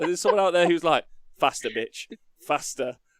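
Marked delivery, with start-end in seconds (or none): none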